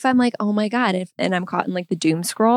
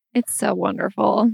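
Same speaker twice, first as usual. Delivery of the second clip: sarcastic, ironic tone. Agreeing with the other speaker's remark, sarcastic. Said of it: "It was said with sarcasm".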